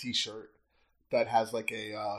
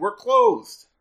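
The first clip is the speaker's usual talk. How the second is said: shouting; 9 semitones higher, 12 dB louder than usual. Character goes downstairs after a knock at the door: yelling. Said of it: "I go downstairs and I yell".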